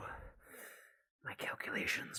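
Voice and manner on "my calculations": soft whispered character voice, under the breath. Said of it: "This is how he's gonna speak".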